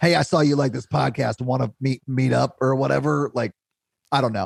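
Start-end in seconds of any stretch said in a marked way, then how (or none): 0.0-3.3 put-on creepy dude voice. Describing creepy men who message women in the group, doing a creepy dude voice. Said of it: "my creepy dude voice".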